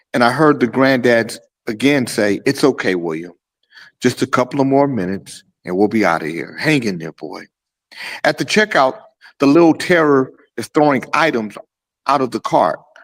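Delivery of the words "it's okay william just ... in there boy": put-on calm, controlled, steady, even-tempered low voice. Retelling a granddad soothing the screaming boy, imitating a calm, controlled voice. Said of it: "saying in a calm, controlled voice".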